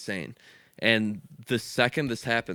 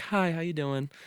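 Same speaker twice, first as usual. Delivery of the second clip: calm, easy, friendly tone, pitched up; 7 semitones higher than usual. Describing friendly shop staff greeting customers, imitating a calm shop worker. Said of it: "Very calm".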